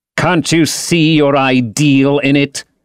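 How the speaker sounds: bitter tone. Narrator reading Dorian's reply in a conversation, bitter. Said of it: "Said Dorian bitterly".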